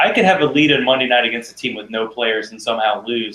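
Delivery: normal talking voice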